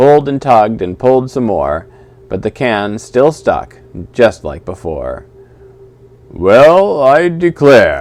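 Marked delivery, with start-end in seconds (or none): 6.3-8.0 big, gruff, loud, booming bear voice. Reading a story aloud as a bear speaks up: big gruff Benji voice. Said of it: "said a big, gruff voice".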